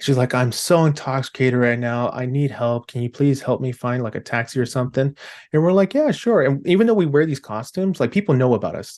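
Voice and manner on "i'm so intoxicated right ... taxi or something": mock-crying woman's voice, tearful and pleading. Retelling how a woman in tears asked the patrol for help, imitating her crying. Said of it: "she's in tears, she's crying".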